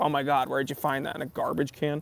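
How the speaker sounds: ordinary talk, nothing marked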